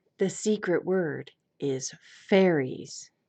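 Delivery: put-on radio announcer voice, close to the mic. Asked by another speaker to give him the radio voice: radio voice. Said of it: "give him give him the radio voice".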